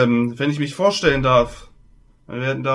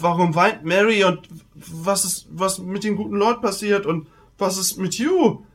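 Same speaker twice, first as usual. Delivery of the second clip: panicked stammering put-on voice, much higher pitch; 5 semitones higher than usual. In a role-playing game, voicing a local who rode out to meet the others, panicked stammering voice.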